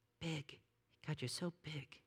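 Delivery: small little voice. Quoting the listener's sister finishing a sentence: small little voice. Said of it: "in her small little voice".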